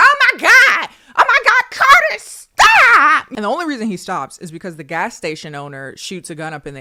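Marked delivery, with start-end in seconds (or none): 0.0-3.3 frantic, drawn-out, very loud, high panicked shriek. Recounting a scene, a speaker acts out a woman yelling at carter, retelling her screaming. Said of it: "She's screaming like".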